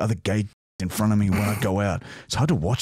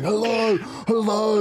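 play-acted frantic high-pitched screaming; 12 semitones higher than usual. Retelling running around the house shouting into the phone: acting out screaming. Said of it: "screaming into the phone".

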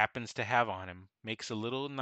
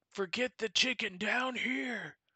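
orc yelling, higher; 12 semitones higher than usual. Voicing an orc calling the other orcs: orc screaming. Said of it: "he screams out".

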